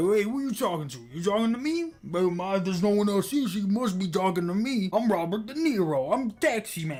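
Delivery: riled-up, angry, confrontational tone. Retelling what a man said after he got mad: imitating an angry man. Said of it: "and he got mad, and he's like".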